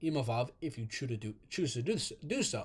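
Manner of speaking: soft stutter, stumbling over the words.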